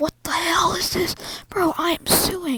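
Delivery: put-on angry rant. Retelling a friend finding a paper straw in his food: imitating someone angry. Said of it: "He's pissed. He's like".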